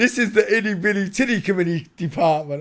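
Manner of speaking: very loud, cracking into laughter. Trying to say a line with a straight face: laughing while talking. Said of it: "I couldn't do it without laughing".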